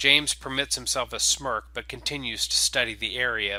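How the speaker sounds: plain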